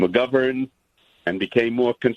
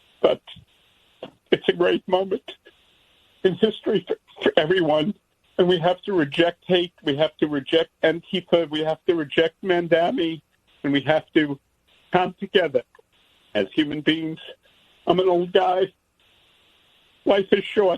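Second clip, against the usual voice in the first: moved, emotional, higher voice; 6 semitones higher than usual. Calling in and closing with a plea to come together: emotional. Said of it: "I'm sorry for being so emotional".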